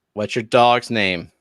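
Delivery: hostile, confrontational, aggressive, slow delivery. Asking another player about their dog: aggressive question. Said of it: "Why did you say it so aggressively?".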